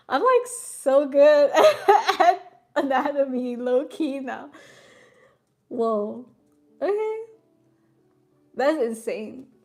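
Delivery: very loud, drawn-out, slow giggling words. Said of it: "I'm gonna stop giggling".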